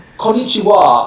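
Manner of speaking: konnichiwa with English intonation. Describing own habit when speaking Japanese: English accent on 'Konnichiwa'. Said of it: "I tend to have my English accent on the Japanese, so I'll say".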